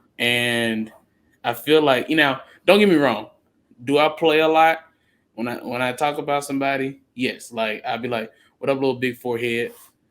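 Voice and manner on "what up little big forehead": plain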